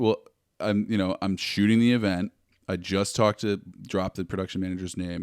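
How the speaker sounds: ordinary talk, nothing marked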